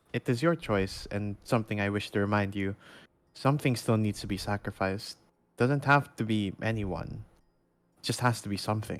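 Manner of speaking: hushed whisper. In a role-play, the speaker's character addresses the town's new leader, whispering. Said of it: "I am gonna whisper".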